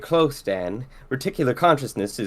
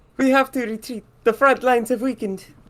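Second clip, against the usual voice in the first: very high put-on Italian woman's accent; 11 semitones higher than usual. Trying the scene again from the beginning; Italian accent. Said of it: "can't do an Italian accent from a woman".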